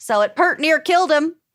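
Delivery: "pert near" said high, in Pittsburgh local accent. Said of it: "means almost".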